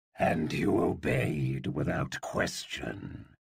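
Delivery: low, rough, growling snap. Reading a story aloud, voicing the tigress answering him: Acrasia's growl. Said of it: "He looked at the Tigress. / whose yellow eyes were narrow. The floor beneath her was vibrating from the tigress's growls. / her voice gentler than it had been before. / [name] growled".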